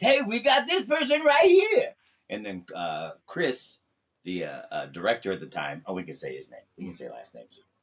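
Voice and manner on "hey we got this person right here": very high, very loud, belted announcer voice. Showing an early take on an announcer character: Hong Kong Phooey voice. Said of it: "I was trying to use something like Hong Kong Phooey. So I was doing it like this".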